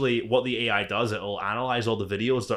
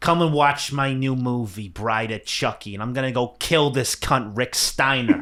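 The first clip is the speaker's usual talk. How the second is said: taunting, stretched-out, slow delivery; 2 semitones higher, 4 dB louder than usual. Doing a requested bit of Chucky calling out a wrestler: Chucky voice. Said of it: "can you do Chucky when he was on W C W".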